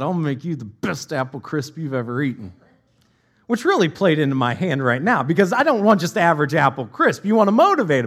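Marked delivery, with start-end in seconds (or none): 0.0-2.5 acted through gritted teeth, lower, quieter. Quoting her reply to the speaker's question, retelling it through gritted teeth. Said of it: "she looked at me through gritted teeth and said".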